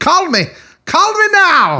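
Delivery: put-on Jamaican accent, very high pitch. Naming a documentary they watched, then doing a Miss Cleo impression. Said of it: "You sounded Jamaican".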